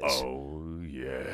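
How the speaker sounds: very low, smooth, sultry, drawn-out oh. Answering a remark about sounding deep, in a deep sultry voice. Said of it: "There it is".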